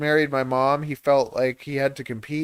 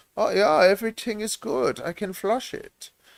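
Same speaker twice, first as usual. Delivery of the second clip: higher-pitched fake German accent; 7 semitones higher than usual. Joking about German toilets, voicing someone in a German accent. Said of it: "my German accent".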